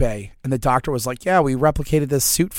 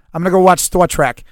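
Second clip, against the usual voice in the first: put-on Boston-like accent, higher and louder; 5 semitones higher, 8 dB louder than usual. Show how your dad says Star Trek, imitating his weird Bostonian-like accent. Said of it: "My dad's accent is a weird combination of what sounds like Bostonian".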